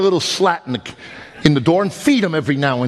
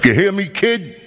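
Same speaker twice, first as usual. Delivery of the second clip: put-on tough-guy Brooklyn accent; 4 semitones higher than usual. Retelling warning the kid away from the road, put-on tough Brooklyn accent. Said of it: "I even threw in a little Brooklyn accent".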